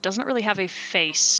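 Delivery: ordinary talk, nothing marked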